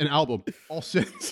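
delivery with a rich-dude vibe. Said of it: "The way he said it".

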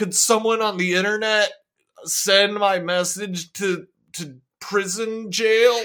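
put-on clueless, confused older man voice. Playing Malcolm with boomer energy using the internet: mock clueless boomer voice. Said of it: "Malcolm has big boomer energy".

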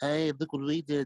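nasal cartoon voice, Liverpool accent. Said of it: "like that nasally Liverpoolian accent".

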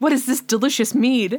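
put-on, posh, super proper medieval British accent. Retelling how he tastes spilled hot chocolate: imitating super proper medieval British. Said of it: "all super proper, like, medieval British".

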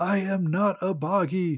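mock, very slow, stretched-out outburst. Speaker retells a comic scene where Nightcrawler answers a Bamf, imitating Nightcrawler yelling. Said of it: "Nightcrawler just yells like".

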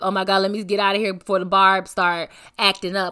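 mock joking delivery. Recounting what a woman said while ranting, retelling a joking remark. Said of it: "she jokingly".

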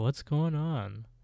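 mock sleepy, drowsy, just-woken voice. Retelling a story, imitating a boy who has just woken up: imitating a drowsy boy. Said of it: "he's just, like, drowsy".

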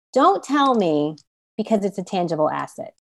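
plain

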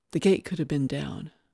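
ordinary delivery

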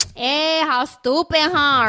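exaggerated, high, slow put-on Latin American accent.

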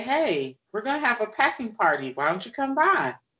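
put-on woman's voice, appealing and inviting.

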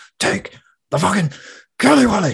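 put-on angry, spat out, very high and loud. Retelling a favourite show scene: imitating an angry spat-out line. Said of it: "he spits as he says it".

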